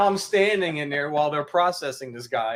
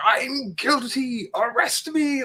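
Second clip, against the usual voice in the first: put-on very slow, high, dragged-out scream; 10 semitones higher than usual. Telling of a stopped driver flipping out at the man who stopped him: imitating a man screaming. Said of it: "he's screaming at him".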